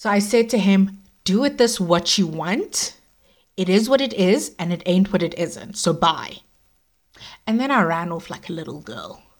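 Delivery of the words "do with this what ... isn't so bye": ordinary delivery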